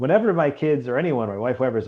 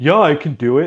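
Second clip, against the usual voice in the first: put-on cocky twelve-year-old boy voice, slower; 3 semitones higher, 6 dB louder than usual. Imitating a twelve-year-old boy's boast, mock-confident twelve-year-old boy. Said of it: "That voice they get where like they're they're so confident".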